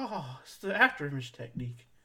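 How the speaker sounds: caught-off-guard, shocked surprise. Recapping a fight scene, imitating Yamcha's shocked surprise. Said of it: "He's like shocked".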